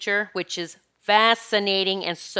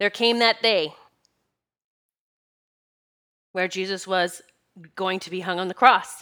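choked up, fighting back tears. Recounting a past-life memory on a podcast, choking back tears. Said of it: "And I am choking back tears".

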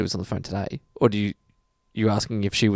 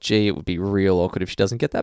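ordinary delivery

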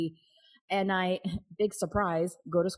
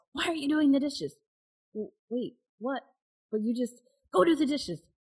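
mock angry yell, high, words tumbling out fast; 6 semitones higher than usual. Retelling what she yelled on coming back, retelling a yell.

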